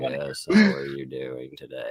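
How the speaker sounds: dull, drawn-out, creaky, sleep-inducing delivery. Imitating a sleep-inducing person the group calls Bruce Melatonin: boring Bruce Melatonin voice. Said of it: "He's like".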